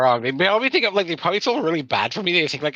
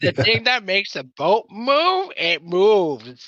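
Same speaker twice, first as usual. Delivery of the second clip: fumbling sailor talk, higher; 4 semitones higher than usual. Talking to the crewmates in character, trying to sound like a sailor: bungled sailor talk. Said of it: "sailor talk".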